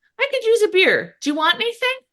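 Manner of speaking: very high, odd-sounding, weird delivery. Retelling a scene from a show, imitating a line said real weird. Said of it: "And he says it real weird".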